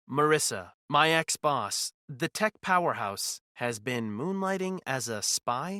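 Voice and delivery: ordinary talk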